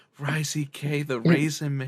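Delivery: slow female announcer voice. Showing an ad switching from a manly announcer to a woman: female voice. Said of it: "some female saying".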